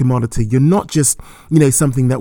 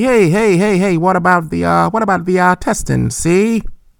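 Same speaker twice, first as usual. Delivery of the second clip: put-on 1920s gangster voice, much higher, slower; 6 semitones higher than usual. Asking Kairos about a voice in the back of his head, 1920s gangster voice. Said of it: "Like a 1920s gangster".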